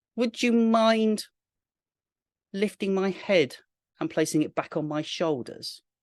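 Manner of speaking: small, tiny, squeaky, high voice. Reading a story, a head speaks up from a woman's lap: small squeaky voice. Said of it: "A little voice down from her lap squeaks up".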